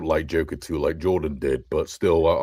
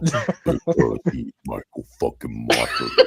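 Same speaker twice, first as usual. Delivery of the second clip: deliberately deepened, very low, slow put-on voice; 5 semitones lower than usual. A podcaster wants a line pitch-shifted very low, then tries it in a very deep voice. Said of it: "pitch shift it very, very low".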